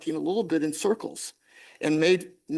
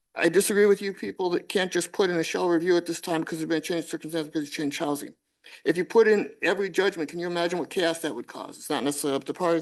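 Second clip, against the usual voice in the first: very fast, rushed, rattled-off reading. Reading a trial court's ruling aloud to a listener, reading very fast. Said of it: "you're reading and you're speaking very fast".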